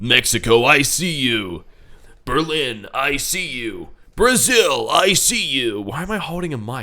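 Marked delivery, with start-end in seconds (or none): 0.0-5.8 deep, slow announcer voice. Describing the announcer during the intervals, the speaker quotes him in a deep announcer voice. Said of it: "he's got this like deep voice".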